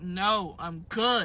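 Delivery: mock annoyed, irritated, fed-up tone, patience running out. Retelling how she turned down a persistent stranger: retelling an annoyed refusal. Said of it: "this exact tone".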